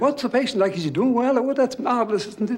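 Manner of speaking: put-on very high, eager, excitable chatter. Retelling an excitable lab head asking about the patient: imitating Chain, excitable. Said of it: "was excitable and said".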